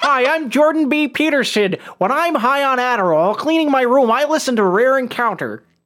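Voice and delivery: put-on frog-puppet sort of voice. Joking around and introducing yourself as Jordan B. Peterson, in a Kermit-like Jordan Peterson voice. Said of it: "more of a Kermit the Frog sort of voice".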